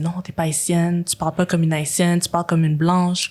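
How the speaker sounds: usual speaking voice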